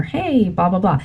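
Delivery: ordinary delivery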